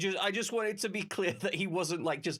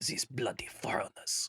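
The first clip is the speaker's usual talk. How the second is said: muttered under breath, much lower; 8 semitones lower, 3 dB quieter than usual. Game master voices an irritated person's remark, muttered under their breath. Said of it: "they will say under their breath".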